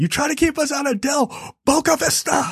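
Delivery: freaked-out yell.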